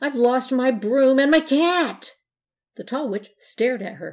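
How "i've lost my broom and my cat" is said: sudden, high, loud cry of panic. Blanche, stopped at a corner with the others, cries out in a panic. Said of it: "cried Blanche in a panic".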